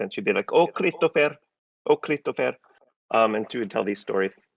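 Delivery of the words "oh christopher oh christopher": put-on thick, heavy Eastern European accent, pitched high. Imitating his great-grandmother telling stories, in Busha's heavy Eastern European accent. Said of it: "she had this really heavy Eastern European accent".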